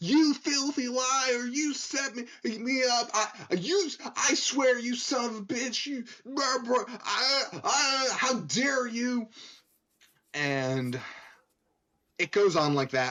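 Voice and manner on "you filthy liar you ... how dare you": very high-pitched, shrill, mock screeching scream. Retelling what a woman was screaming at a man: imitating a woman screaming. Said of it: "she's screaming".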